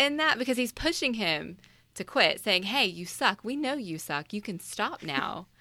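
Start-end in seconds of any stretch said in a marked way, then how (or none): 2.6-5.4 mocking, sarcastic, needling put-down. Retelling how a caddie pushes a player to quit: imitating a sarcastic tone. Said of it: "being kind of sarcastic".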